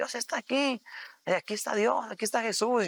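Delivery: high, excited, loud shouting.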